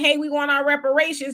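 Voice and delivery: normal talking voice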